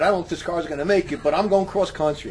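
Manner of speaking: plain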